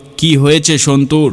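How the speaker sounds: plain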